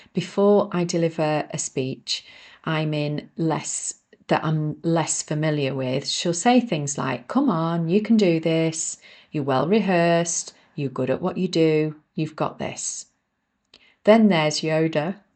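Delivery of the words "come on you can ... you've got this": put-on upbeat, caring, compassionate, positive tone. Speaker voices her inner encouraging character before a speech, positive and compassionate. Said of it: "her voice tone is positive and compassionate".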